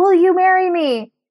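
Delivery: loud, high-pitched yelling. Retelling how the pastor proposed during church: imitating someone yelling. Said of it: "yells it because he's trying to".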